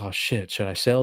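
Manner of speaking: nervous, fearful, panicky voice. Imitating an investor panicking as the market drops: mock fearful panic. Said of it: "you get fearful and you're like".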